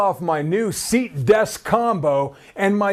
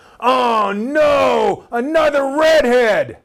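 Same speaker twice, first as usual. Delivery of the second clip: mock very slow, loud, high angry cry, no stretched; 5 semitones higher, 4 dB louder than usual. Retelling what the teacher said to the class: imitating a loud angry voice. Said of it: "loud, angry voice".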